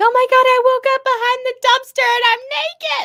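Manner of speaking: very high-pitched, loud acted freaked-out outburst. Retelling how a woman on a show reacted after waking up naked: imitating someone freaking out. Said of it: "she was freaking out".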